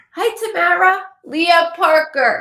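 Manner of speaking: loud, high, bingo-caller-style calling yell. Caller greets the host on air, yelling. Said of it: "I'm yelling at you like it's bingo".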